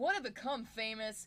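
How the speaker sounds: booming, very loud, exaggerated, over-the-top dramatic read. Reading something aloud for listeners: dramatic reading. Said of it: "I'm going to read that in a really uh, dramatic way".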